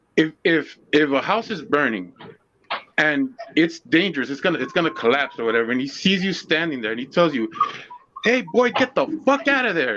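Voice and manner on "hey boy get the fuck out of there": high, loud screaming voice. Picturing a firefighter at a burning house ordering someone out, imitating a firefighter screaming. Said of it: "and he screams at you".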